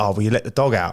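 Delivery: ordinary delivery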